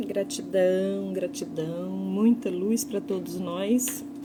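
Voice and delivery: slow, soft, calm, unhurried speech.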